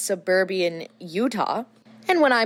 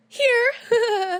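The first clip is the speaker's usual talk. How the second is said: put-on, very high, jittery, nervous shout. Retelling being asked where they're from, the speaker shouts back: retelling a nervous shout.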